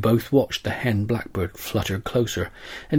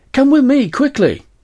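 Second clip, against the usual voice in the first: very high, very loud excited yell; 8 dB louder than usual. A father runs into the house, calling his child to come; excited shout. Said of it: "he shouted".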